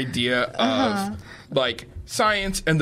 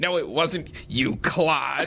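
mock frustrated, exasperated voice. Speaker recalls a bit, doing the voice of a frustrated liberal. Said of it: "you would do this voice of like a frustrated liberal".

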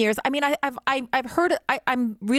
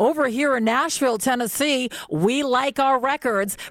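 big-voiced live commercial announcer voice. Recalling old live commercials and the announcer, big commercial announcer voice. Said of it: "come on with a big voice and say".

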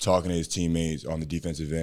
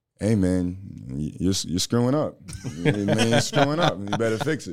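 raised, laid-back, direct, reproachful tone; 4 semitones higher, 6 dB louder than usual. Answering a request to impersonate, Jason Kidd impersonation. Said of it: "can you give me a Jason Kidd impersonation?".

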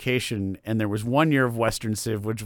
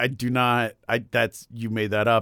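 ordinary talk

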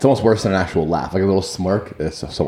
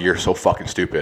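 put-on sarcastic, mocking laughter. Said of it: "laughing, like, sarcastically kind of thing".

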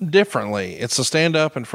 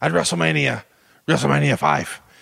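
put-on bad Russian accent. Riffing on a wrestler's promo: Nikita Koloff's bad Russian accent. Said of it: "He's all over himself with the worst accent ever".

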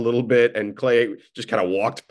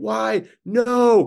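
put-on screaming, higher pitch; 11 semitones higher than usual. Retelling a coach's reaction to a mistake: imitating Steve Kerr screaming.

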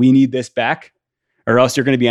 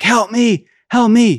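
very high, slow, drawn-out wailing cries; 11 semitones higher, 3 dB louder than usual. Retelling the cries everyone heard the next morning, imitating cries for help. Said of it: "all you hear is these cries like".

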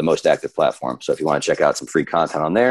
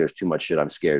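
ordinary delivery

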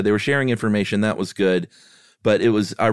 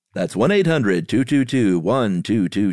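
mock TV commercial announcer voice. Saying the poison control phone number aloud: mock TV commercial announcer voice. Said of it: "You gotta do it like a T V commercial".

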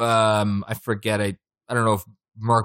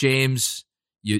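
ordinary talk

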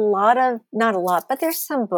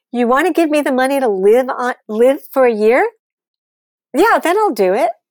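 loud, raised mock scream; 4 semitones higher, 6 dB louder than usual. Retelling an argument with a man over money for a book, retelling screaming at him. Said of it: "And I'm screaming at him".

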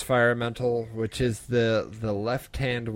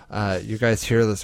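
normal talking voice

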